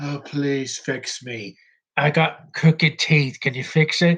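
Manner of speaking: lifeless, slow, dragging zombie voice. Mocking a performance as irritating, the speaker does a zombie voice. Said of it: "a zombie talking like this".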